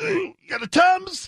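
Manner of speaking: mock pained, high, breathy pleading voice.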